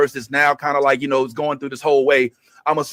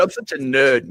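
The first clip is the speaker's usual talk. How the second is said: clumsy, bad, put-on British accent. Quoting the guest's interview words in a British accent. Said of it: "my British accent".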